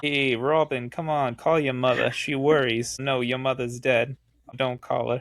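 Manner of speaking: put-on New Jersey accent. Joking that Batman comes from New Jersey: Batman with a New Jersey accent. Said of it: "we're making fun of people in New Jersey".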